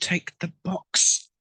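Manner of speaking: hushed whisper under the breath. Voicing a character slipping a guard a box: whisper. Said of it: "I whisper to him".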